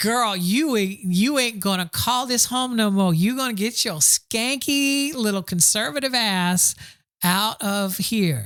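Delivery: sassy, attitude-filled, sharp scolding tone. Retelling what the Pope would say, as Pope Francis as sassy woman.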